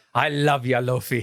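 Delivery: put-on Scottish cartoon accent. Voicing a character's line while discussing an anime: Scrooge McDuck accent. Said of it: "for more Scrooge McDuck from DuckTales".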